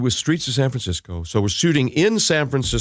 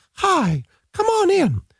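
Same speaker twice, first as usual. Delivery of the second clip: very high falsetto, rising slowly, drawn out. Describing playing a woman, he demonstrates: Minnie Mouse-like woman voice. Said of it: "you talk like this".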